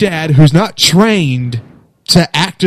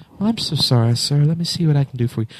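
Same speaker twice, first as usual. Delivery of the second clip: put-on sweet phone voice, lower, quieter; 2 semitones lower, 7 dB quieter than usual. Retelling a call where the phone agent answered his swearing; imitating her sweet voice. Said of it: "her just sweet voice came on there".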